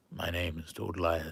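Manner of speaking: deep, dead-intense frog-gargoyle monster voice. Introduce yourself as Toadliath, the frog version of Goliath, in a Keith David voice. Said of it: "It's still Keith David, though, doing the voice".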